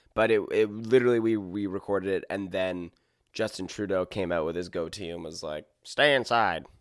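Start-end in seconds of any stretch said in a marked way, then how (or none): 5.9-6.6 put-on old-fashioned 1950s voice. Retelling what Justin Trudeau said that day, as a 1950s-style Trudeau impression. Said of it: "that's my Trudeau impression as a guy from the 50s".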